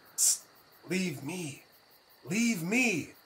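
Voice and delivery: loud stage whisper. A player's character whispers to compatriots ten feet away, in a loud whisper. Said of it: "So I'm going to whisper".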